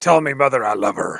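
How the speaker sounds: put-on sea-dog pirate accent. Voicing a character giving a final message, in a pirate accent. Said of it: "in a pirate accent".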